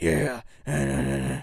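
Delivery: super raspy voice, very drawn-out and slow. Describing a bald wrestler to a friend: super raspy Stone Cold Steve Austin voice. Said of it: "he always talks like".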